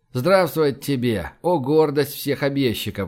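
ordinary delivery

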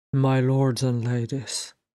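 ordinary delivery

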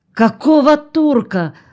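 aghast, shocked, horrified tone, high-pitched. Narrator reads Galina answering Chesnukhin's half-drunk raving, horrified. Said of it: "ужаснулась Галина".

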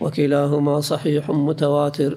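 plain

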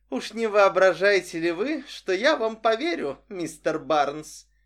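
scoffing, needling, mocking and teasing tone. Narrator voices a woman dancing with a man who flatters her: mocking. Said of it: "насмешливо сказала она".

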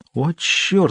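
high-pitched whisper under the breath. The narrator, beside Oleg, exclaims in a whisper. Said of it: "прошептал я".

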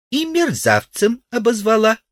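very high, sly, needling, snide tone. The grasshopper comments on Udalov's story about the cleaning woman, snide remark. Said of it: "заметил ехидно кузнечик".

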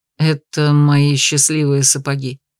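a little embarrassed. The duke answers the narrator's cautious question, a little embarrassed. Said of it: "немного смущенно признался герцог".

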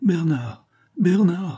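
desperate high cry full of dread and terror. Brunie bursts through the yard door calling for bernard, crying out in terror. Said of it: "s'écria-t-elle d'une voix pleine d'épouvante".

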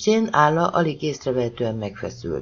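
plain reading voice

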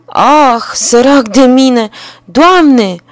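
yelled out. Narrator reads a man crying out as he finds birds eating his grain, shouted. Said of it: "Omul a strigat".

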